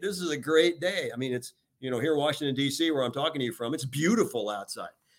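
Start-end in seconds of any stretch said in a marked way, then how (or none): 0.0-1.1 upbeat, enthusiastic, passionate, slightly higher voice. Showing how to talk to people when leading: positive and passionate. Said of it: "be positive, be passionate".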